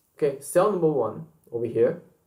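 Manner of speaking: plain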